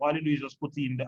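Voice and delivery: ordinary talk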